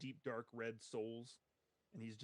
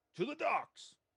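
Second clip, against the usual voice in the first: very high, loud shout; 14 semitones higher, 5 dB louder than usual. Narrating to Bernard what a character shouts as the ship is steered back, shouting.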